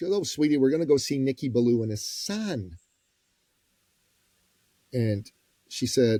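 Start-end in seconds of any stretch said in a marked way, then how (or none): none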